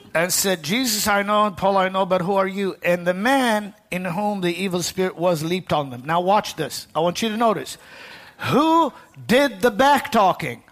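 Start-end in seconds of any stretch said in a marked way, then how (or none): none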